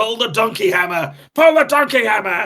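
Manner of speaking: acted, shrill, high, very loud furious yelling. Retelling how everyone got very angry at each other: imitating an angry shout.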